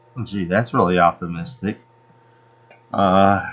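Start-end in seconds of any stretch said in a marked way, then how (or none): none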